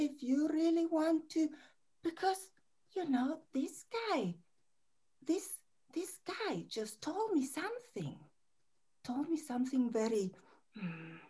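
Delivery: put-on frightened voice, Spanish accent dropped. Speaking as a lonely part of oneself: fearful voice without spanish accent. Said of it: "shift into another voice with no, no Spanish accent, but that character, this, like, fearful".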